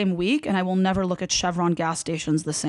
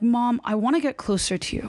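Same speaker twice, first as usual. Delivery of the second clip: ordinary talk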